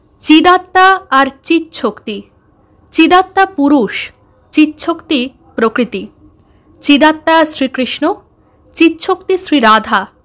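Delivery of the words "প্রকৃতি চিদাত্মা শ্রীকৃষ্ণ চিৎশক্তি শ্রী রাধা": ordinary delivery, nothing marked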